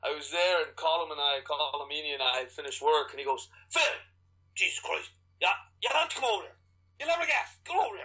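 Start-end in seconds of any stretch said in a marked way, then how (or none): 3.7-8.0 very high, pitched-up voice. Retelling a co-worker calling him over after work: imitating Colm Meaney. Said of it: "It's a great impression".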